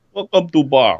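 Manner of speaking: jolly, cheerful, happy put-on Russian accent. Trying out voices for a friendly innkeeper, greet guests in a happy Russian accent. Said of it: "he's happy Russian".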